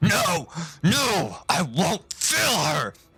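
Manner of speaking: very slow, drawn-out, high, pained, anguished cry. Voicing a villain struck through the kidney: crying out in pain. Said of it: "He cries out and he says".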